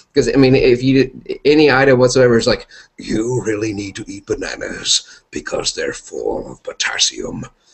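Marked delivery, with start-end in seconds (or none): 3.0-7.5 epic, grand, larger-than-life heroic delivery. Imitating how the character would sell any item: epic Optimus Prime voice. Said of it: "he would make everything sound so epic".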